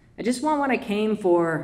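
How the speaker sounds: ordinary delivery, nothing marked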